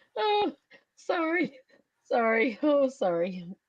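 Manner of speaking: uncontrollable laughing to tears, swooping pitch. Speaker apologizes to the audience after a joke gets them, crying laughing. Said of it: "I'm crying laughing, literally".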